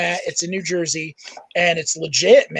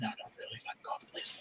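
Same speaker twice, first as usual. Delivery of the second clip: hushed, breathy whisper under the breath; 6 semitones lower, 21 dB quieter than usual. Retelling what someone whispered during a tense confrontation: imitating a whisper.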